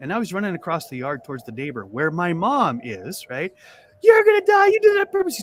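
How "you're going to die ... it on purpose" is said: very high, loud, shrill scream through tears. Speaker retelling the boy he accidentally hit running off, imitating screaming while crying. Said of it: "He's screaming".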